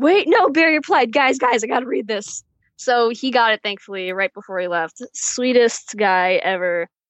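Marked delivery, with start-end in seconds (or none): 0.0-2.4 screaming with thrilled excitement. Retelling the moment barry replied, to the family in the parking lot: retelling excited screaming. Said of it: "I'm literally screaming at my family".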